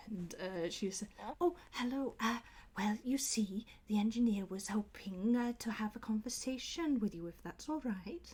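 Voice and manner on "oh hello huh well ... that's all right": nervous, shy, timid owl voice. Voicing a nervous owl blinking at a visitor: nervous shy owl voice. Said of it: "very, very nervous owl".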